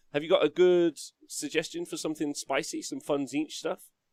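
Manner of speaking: ordinary talk, nothing marked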